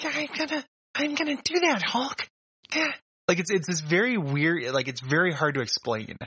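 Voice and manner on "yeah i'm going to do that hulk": put-on scratchy, high-pitched kid voice, higher. Talking with a co-host about a kid's odd voice, doing a scratchy high-pitched kid voice. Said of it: "very like kind of scratchy, high pitched voice".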